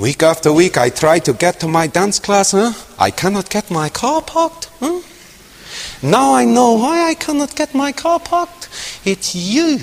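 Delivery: put-on thick, heavy non-native broken English accent. Retelling what an Auschwitz survivor recently told the speaker, in her broken English accent. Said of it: "with her broken English accent".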